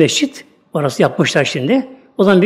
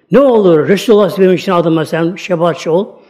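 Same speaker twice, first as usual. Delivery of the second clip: ordinary delivery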